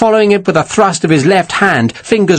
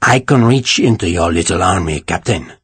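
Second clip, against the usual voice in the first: deep, low-pitched voice, lower; 8 semitones lower than usual. Reading a threat spoken by a character to a captain: deep voice. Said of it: "he said in his deep voice".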